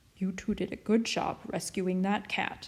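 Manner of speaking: ordinary delivery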